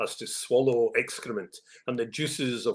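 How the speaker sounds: ordinary delivery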